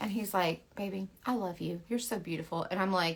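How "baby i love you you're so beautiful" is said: mock nice, sweet, loving, sweet-talking voice. Retelling an argument where the husband only answers kindly: imitating husband being nice. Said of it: "Why are you being so nice to me?".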